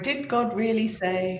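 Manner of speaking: hushed half-whisper. Acting out an ai earring half-whispering into someone's ear: half-whispering ai voice. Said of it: "The A I whispering".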